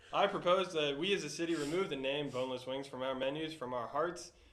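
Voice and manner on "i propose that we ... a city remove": plain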